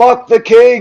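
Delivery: high-pitched, shrill, full-volume, all-out yell. Game narrator voices a man sitting alone in the back corner: shouting as loudly as possible. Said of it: "he just says as loudly as he can".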